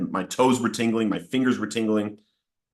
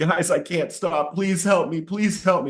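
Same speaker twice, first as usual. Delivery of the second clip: put-on, high, tearful, weeping and crying plea; 7 semitones higher than usual. Retelling begging a Bible study group for help: retelling a tearful plea. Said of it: "And I'm crying".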